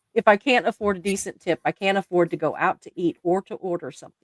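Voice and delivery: normal talking voice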